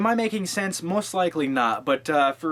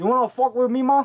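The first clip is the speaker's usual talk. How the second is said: bad put-on Cuban accent, pitched higher; 9 semitones higher, 4 dB louder than usual. Quoting a line from the movie being reviewed: bad Al Pacino Cuban voice. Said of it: "you know that Cuban voice".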